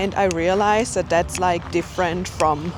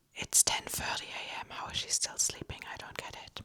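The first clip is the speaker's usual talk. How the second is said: very quiet, hushed whisper under the breath. Vlogging while a roommate is still asleep, whispering. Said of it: "so I have to whisper".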